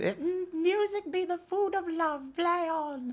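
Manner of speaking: put-on squeaky, very high-pitched, slow little child's voice. Retelling a first-grade Twelfth Night line on stage: high-pitched child's voice. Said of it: "in a very high-pitched voice".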